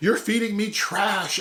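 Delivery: loud, high shouting.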